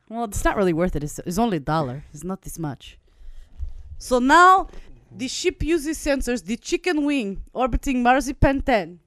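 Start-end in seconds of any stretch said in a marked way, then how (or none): 4.0-8.8 put-on Russian accent, slow storybook narration style. Narrating a spaceship story after being asked to: russian accent. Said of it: "could she be Russian?".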